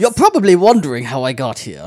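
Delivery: deliberately poor character voice, loud and swooping. Imagining the character narrating a live action show, worst Hondo voice. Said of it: "That's the worst Hondo voice".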